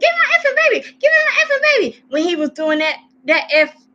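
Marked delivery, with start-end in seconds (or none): 0.0-2.0 mock shrill, very high, frantic, hysterical yelling. Criticizing a woman in a video for her late alarm: imitating hysterical yelling. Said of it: "You wasn't yelling hysterically".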